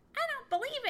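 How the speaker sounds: high-pitched, sharp, snappish voice. Chatterer finally answers Johnny Chuck after staring at him: snapping. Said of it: "he snapped".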